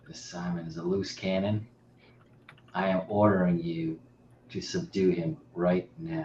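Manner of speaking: hushed, half-whispered, under the breath. Player speaking in character to a lieutenant during a role-play game, half-whispering. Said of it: "Like I'm whispering this to him".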